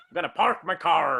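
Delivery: growled pirate-like American R. Joking about how americans pronounce words, in a pirate-like american accent. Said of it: "Americans in large part sound like pirates".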